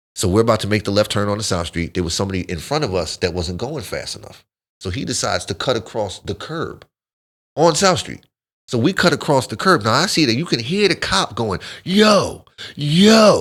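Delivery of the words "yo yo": high screaming yell at the top of the lungs. Speaker retells a cop yelling at their car, imitating a cop screaming. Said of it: "he's screaming at the top of his lungs".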